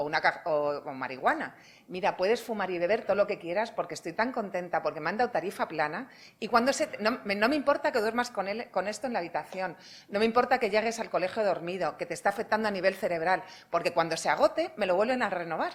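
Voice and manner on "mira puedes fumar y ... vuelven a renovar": plain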